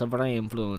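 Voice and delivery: put-on weird Italian dude accent. Reading out a game event text aloud: weird Italian dude voice. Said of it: "like a really weird Italian dude".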